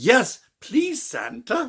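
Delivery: put-on little girl's British voice. Quoting a favorite line from a horror film: little girl's British voice. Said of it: "that little girl's British voice".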